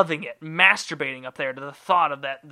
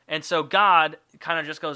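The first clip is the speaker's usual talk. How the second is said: ordinary talk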